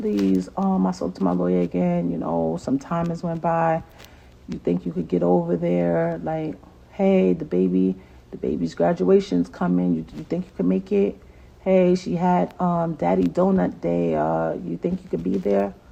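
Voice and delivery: put-on sweet, careful, polite, almost begging tone. Retelling own past requests to the child's father: imitating own nice begging. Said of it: "I talk so nice".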